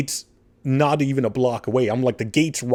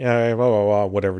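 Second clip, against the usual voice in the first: mock-bored droll voice, put-on; 3 semitones lower than usual. Retelling a call to a corporate office, mimicking the lady who answered: imitating a droll tone. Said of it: "just like real droll".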